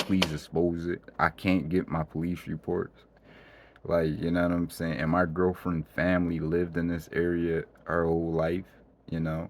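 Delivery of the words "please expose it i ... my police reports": usual speaking voice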